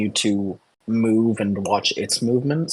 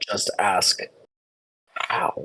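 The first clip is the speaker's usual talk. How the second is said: rasping whispered voice; 2 semitones lower than usual. Game master voices a voice the players hear in their minds, a raspy whisper. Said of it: "you hear a raspy whispering voice in your mind".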